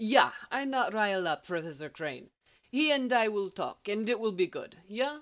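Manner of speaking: put-on speaking with a Middle European accent. Replying to the guard after a quick smile, in a thick Middle European accent. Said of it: "replying in a thick and unidentifiable Middle European accent".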